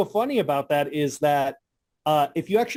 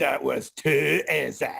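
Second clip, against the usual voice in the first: imitated heavily accented, broken English. Recalling how a voice actor said a line, imitating his accented English. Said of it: "The voice actor didn't know how to speak English, so his English is hilarious".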